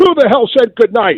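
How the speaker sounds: put-on very high-pitched shouting. Recalling the end of a CNN show, the speaker acts out a man bursting in, imitating someone shouting. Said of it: "and he's shouting".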